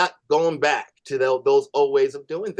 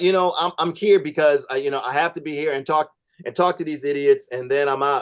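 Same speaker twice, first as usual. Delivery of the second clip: ordinary talk, nothing marked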